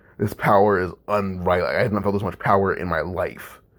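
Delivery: ordinary delivery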